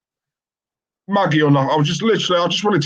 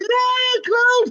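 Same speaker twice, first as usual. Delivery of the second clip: very high, squeaky, mocking voice. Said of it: "It's like".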